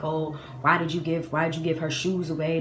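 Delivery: ordinary talk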